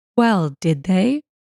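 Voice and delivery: insolent, snotty, faintly sneering tone. Reading a story, a rude salesman asking a question: slight sneer. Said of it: "with a bit of a sneer".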